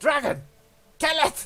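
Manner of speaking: high-pitched, loud shout. Game master voicing the ship captain as a dragon attacks, yelling out. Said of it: "the ship captain yells out".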